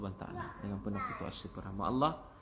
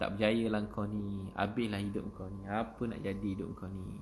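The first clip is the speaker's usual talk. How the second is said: plain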